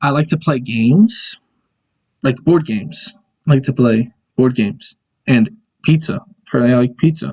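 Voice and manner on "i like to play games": usual speaking voice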